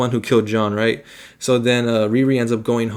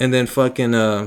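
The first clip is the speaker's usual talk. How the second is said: normal talking voice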